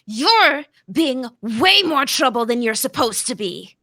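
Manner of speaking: loud, furious, angry shout. Playing a character who yells at a man who stole her weapon: yelling in anger. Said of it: "she's just gonna yell at him".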